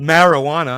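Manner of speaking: marijuana, stress on first a. Imitating how someone says marijuana, with stress on first a of marijuana. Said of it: "he emphasizes that first A".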